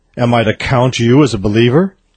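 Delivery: ordinary talk, nothing marked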